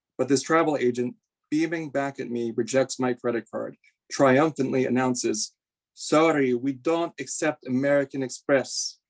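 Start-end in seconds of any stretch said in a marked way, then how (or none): 6.0-8.9 slow, drawn-out, put-on Russian accent. Quoting a travel agent rejecting a credit card, in a russian accent. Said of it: "that was more of a Russian accent".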